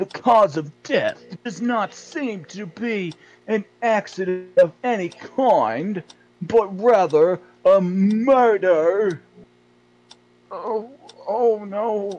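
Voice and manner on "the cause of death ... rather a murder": put-on silly British accent, higher and louder. Reading a news article aloud in a game: stupid british voice. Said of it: "To do that voice".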